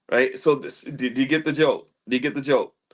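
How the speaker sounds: ordinary talk, nothing marked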